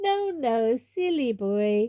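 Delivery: very slow, with light, tinkling laughter through words. Reading a story aloud, Fleur answering Harry: tinkling laugh while speaking. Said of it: "said Fleur with a tinkling laugh".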